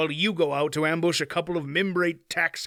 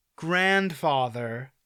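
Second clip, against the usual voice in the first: put-on grandfather stressed, leaned on hard. Reading a story aloud, a boy warning a stranger with one word: stress on GRANDFATHER. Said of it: "stressing the word".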